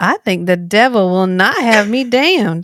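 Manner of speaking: American Southern accent. Reading a Shakespeare quote aloud: Southern accent. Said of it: "I will read a Shakespeare quote in the original Southern accent".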